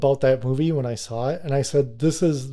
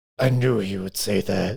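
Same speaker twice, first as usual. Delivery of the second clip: put-on creepy old man voice, much lower; 5 semitones lower than usual. Speaker quotes the line planned for their opening bit, in a creepy old guy voice. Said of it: "the creepy old guy voice".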